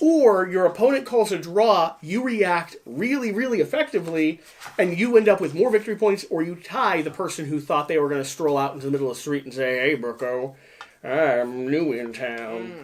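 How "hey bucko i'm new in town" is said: put-on jolly fat old man voice, very low, very slow. Acting out a stranger strolling into the street: jolly old fat man voice. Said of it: "it's like a jolly old fat man that's just showing up".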